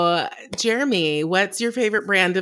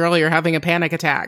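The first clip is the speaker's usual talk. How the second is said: ordinary talk, nothing marked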